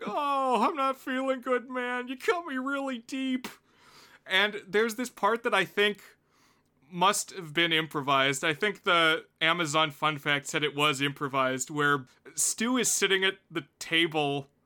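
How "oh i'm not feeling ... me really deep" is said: pitched-high whine. Retelling a movie's stabbing scene: imitating Matthew Lillard's whining. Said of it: "he does this great whining".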